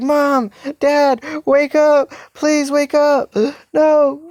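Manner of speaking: crying out, weeping.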